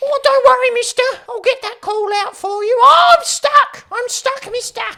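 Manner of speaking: very high, very loud cartoon voice. Speaker voicing a character in a scene, in an Elmo-like voice. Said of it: "You almost sounded like Elmo".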